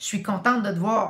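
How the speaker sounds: cold, clipped, curt, dry tone. Demonstrating non-verbal communication by greeting someone in a curt, dry tone. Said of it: "avec un ton sèche".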